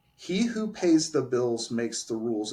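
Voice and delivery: ordinary talk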